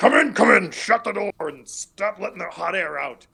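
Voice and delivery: rough, gruff voice. Voicing someone heard as the door opens, in a gruff voice. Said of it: "you hear this gruff voice that's like".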